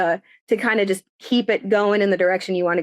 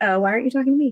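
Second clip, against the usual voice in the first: pitched-up voice as a dog; 5 semitones higher than usual. Voicing the dog who heard the speaker's voice: voicing the dog. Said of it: "She heard my voice and she's like".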